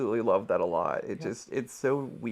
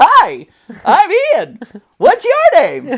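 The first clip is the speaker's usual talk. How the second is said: put-on very high-pitched, very loud children's TV show voice; 15 dB louder than usual. Explaining a greeting a listener mistook, redoing it in Sesame Street voice. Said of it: "I was trying to go like Sesame Street".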